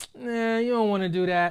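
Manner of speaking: mock dismissive, doubting voice. Speaker recalls the voice in their head that held them back, mock-dismissive inner naysayer voice. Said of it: "internal naysayer voice".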